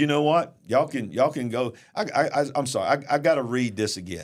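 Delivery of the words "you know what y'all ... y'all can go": ordinary delivery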